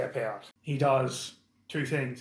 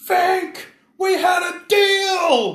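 very high, very loud shrill scream, deal drawn out; 12 dB louder than usual. Game master voices an elf running out at the players, screaming. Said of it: "he just screams".

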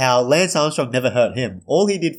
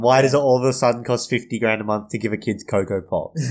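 ordinary delivery

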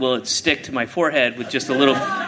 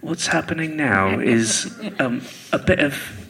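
questionable, dodgy put-on English accent. Speaker doing a character bit in conversation: questionable English accent. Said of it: "That has a questionable English accent".

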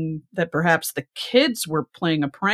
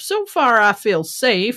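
put-on country accent, put on, high; 5 semitones higher, 4 dB louder than usual. Reading a news story, quoting a mother's words in a country accent. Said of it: "why am I giving a country accent?".

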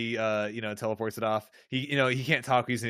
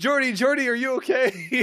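very high, frantic, panicked voice; 12 semitones higher, 4 dB louder than usual. Speaker recaps an episode where Troi calls out to a crewmate, imitating Troi's panicked voice. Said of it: "Like in a panicked voice is like".

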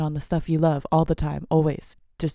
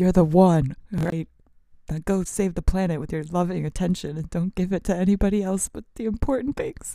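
words broken up by bursts of laughter; 2 semitones higher than usual. Telling listeners to go save the planet, laughing while talking. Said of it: "I don't know why I'm laughing".

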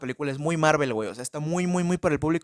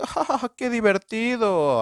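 high, cackling, laughing cartoon-villain voice; 7 semitones higher, 3 dB louder than usual. Speaker complaining about a movie villain, mock villain laugh. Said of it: "y el güey se ríe así de".

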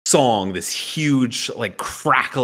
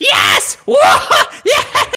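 very high, shouted, swooping creature whoop; 7 dB louder than usual. Narrator voicing the other lizard folk as the zombie is obliterated, cheering. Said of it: "And the other lizard folk cheers".

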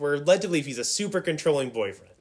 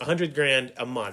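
ordinary talk

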